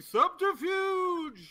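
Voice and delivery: grand, theatrical, loud, very high stress on "subterfuge". Speaking in character to newly met townsfolk: loud, dramatic stress on subterfuge. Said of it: "I like the word subterfuge said that way".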